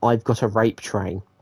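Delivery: normal talking voice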